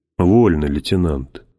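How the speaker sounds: ordinary delivery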